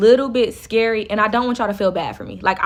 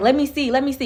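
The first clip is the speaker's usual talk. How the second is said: acted talking while laughing; 4 semitones higher than usual. Retelling what a man said while going through his phone, imitating someone laughing while talking. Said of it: "But he laughing though".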